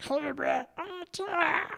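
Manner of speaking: high gravelly villain voice. Two speakers praising a villain's voice, one repeats his line: Cobra Commander impression. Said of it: "like way up and gravelly".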